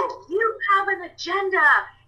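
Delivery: put-on, very high, shrill, top-of-the-lungs scream. Speaker retells a friend who phoned them, imitating the friend screaming. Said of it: "he was screaming at the top of his lungs".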